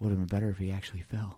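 low, hushed half-whisper. Retelling a remark said to one person so another won't hear: half-whispering. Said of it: "in like kind of like a whisper".

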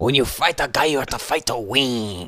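put-on macho Mexican accent. Retelling something that came to life to motivate him: stereotypical macho Mexican accent. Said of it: "stereotypical like macho Mexican guy accent".

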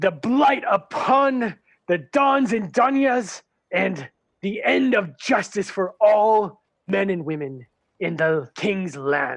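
pompous, puffed-up, grandstanding yelling. Telling the story, the narrator voices the captain addressing everyone, yelling. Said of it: "he starts yelling at everybody".

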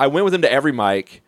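plain

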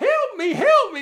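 very high, shrill, loud, funny fake woman voice. Speaker recalls negotiating with a hostage, a man playing a woman: man's funny fake woman voice. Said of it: "he had this really funny voice".

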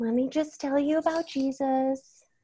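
mothering kindergarten-teacher voice, high and slow. Describing a woman's sermon, imitating the voice used for kindergartners. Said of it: "the tone of voice that some women adopt when they're talking to like a room of kindergartners".

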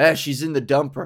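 rough, gruff, clumsy, offhand delivery. Retelling a husband's remark about his wife: imitating a gruff, clumsy remark. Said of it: "He just sort of gruffly and, uh, clumsily".

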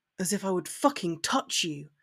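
low, hushed growl. Narrator reading a man's reply to a woman pointing her wand at him: growling. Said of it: "he growled".

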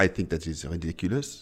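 put-on murmured with a French accent. Impersonating mom while describing how she talks: imitating mom's French accent. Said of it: "I can impersonate her".

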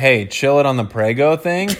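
normal talking voice

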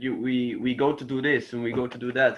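Dutch accent impression. Describing how people in the Netherlands talk, imitating Dutch-accented English. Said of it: "people talk like this".

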